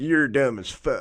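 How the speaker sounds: put-on loud, outright Southern US accent. Retelling what someone said, Southern American accent. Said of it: "this kind of Southern American accent".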